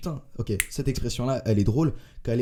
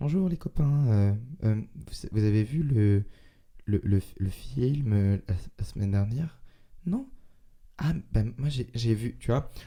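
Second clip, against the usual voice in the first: mock hesitant, stammering man's voice. Imitating a guy whose way of talking socially fails: imitating a hesitant, stammering guy. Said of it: "Un mec qui va parler avec ce ton de voix-là".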